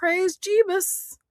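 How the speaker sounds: very high-pitched cartoon-style exclaiming voice. Recalling a line from The Simpsons movie: Homer Simpson voice. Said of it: "Homer's like".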